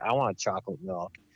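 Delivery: low, put-on bone-tired, sleepless-sounding voice. Retelling a gas station moment on a sleepless tour: imitating a sleep-deprived friend. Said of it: "sleep deprived from driving constantly".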